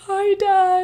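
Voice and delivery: high, loud, excited voice.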